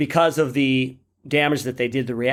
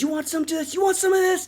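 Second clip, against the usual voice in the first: wild, frantic, rapid-fire delivery, very high pitch. Retelling a film scene where Hudson fires at aliens: imitating Hudson going crazy. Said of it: "he's just going crazy".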